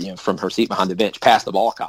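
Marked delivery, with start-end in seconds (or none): none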